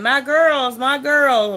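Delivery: acted, long, high, drawn-out screaming call. Retelling how mom screamed when the bull threw the girls: imitating mom screaming. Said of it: "my mom went to screaming".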